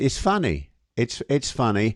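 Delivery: giggly, bubbling, laughing through words, swooping. Looking at a picture on screen, laughing while talking. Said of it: "I can't stop laughing".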